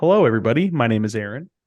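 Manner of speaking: radio announcer-style voice. Opening the show, the host greets everyone in his radio voice. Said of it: "Aaron was using his radio voice".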